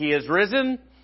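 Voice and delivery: lively energetic delivery. Showing the group how to say the greeting: said with lots more energy. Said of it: "But we say it with a lot more energy. So it'll be a little more like he is risen".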